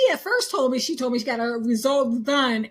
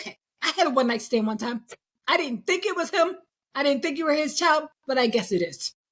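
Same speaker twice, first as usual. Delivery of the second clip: put-on, attempted Italian accent; 2 semitones higher than usual. Quoting a woman's Italian mother finally explaining herself, in an attempted Italian voice. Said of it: "I'm trying to do my Italian voice".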